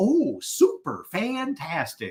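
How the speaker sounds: chipper, perky, gushing sing-song delivery. Recalling a very positive coworker's daily answer, imitating her perky reply. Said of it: "you perky little so-and-so".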